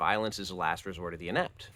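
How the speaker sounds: usual speaking voice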